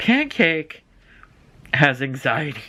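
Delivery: speech breaking into laughter through the words. Telling about their cat's vet visit, the speaker laughs while talking. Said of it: "Sorry, I'm laughing because".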